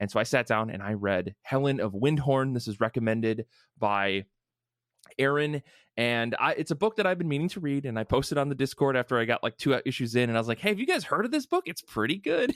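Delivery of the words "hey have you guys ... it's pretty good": play-acted sarcastic innocent tone, very high, sing-song. Retelling own post on the Discord about a book: imitating own sarcastic tone. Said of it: "Sarcastically, sarcastically".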